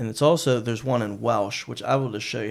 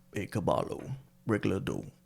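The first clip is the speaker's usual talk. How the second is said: soft, Spanish-language television style delivery; 3 semitones lower, 8 dB quieter than usual. Asked to say a phrase in Spanish, doing a Telemundo voice. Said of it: "I think I can say it in my Telemundo voice".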